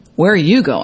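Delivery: ordinary talk, nothing marked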